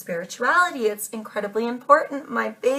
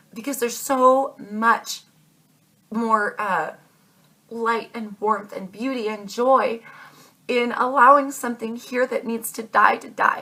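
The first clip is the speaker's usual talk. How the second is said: voice catching, choked up with emotion. Speaking directly to Aquarius and the listeners, choked up. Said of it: "I'm getting all choked up here".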